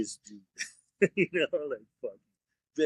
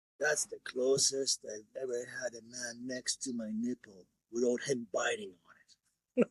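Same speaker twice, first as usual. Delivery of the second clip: soft, raspy, hoarse delivery; 6 dB quieter than usual. Recalling an early client's remark to the speaker, imitating her hoarse voice. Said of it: "she goes in this kind of hoarse voice".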